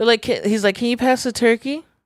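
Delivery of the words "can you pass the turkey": bad put-on Canadian accent, higher. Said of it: "I don't know how to do a Canadian accent".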